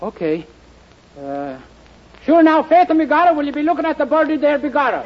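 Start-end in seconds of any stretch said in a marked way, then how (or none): 1.2-5.0 bad, off-the-mark fake Italian accent. Answering a request to say a line with an Italian accent: put-on Italian accent. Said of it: "say it with an Italian accent".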